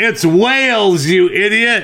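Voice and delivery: mock, very high, shrill yell. Telling a bar joke, one woman yells back: imitating a woman yelling. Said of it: "One of them yells".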